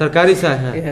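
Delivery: ordinary talk, nothing marked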